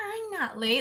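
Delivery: high line held on the exact same note. Explaining how to copy a line exactly by matching its pitch, hitting the same note. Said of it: "hear the pitch of the note they hit".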